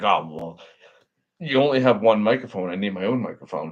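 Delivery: playfully wounded, jokingly hurt, sulky tone. Retelling a podcast guest wanting his own microphone, imitating Purdue acting butthurt. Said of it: "he got all like jokingly butthurt".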